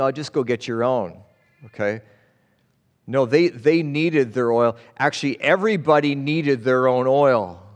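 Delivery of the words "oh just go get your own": plain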